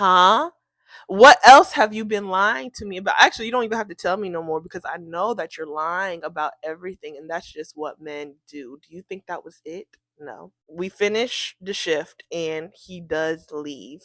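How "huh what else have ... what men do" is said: usual speaking voice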